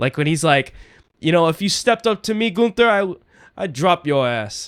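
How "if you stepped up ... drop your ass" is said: put-on New York accent, much higher. The speaker quotes a man's threat to another man, imitating a new york accent. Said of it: "using more of his New York accent".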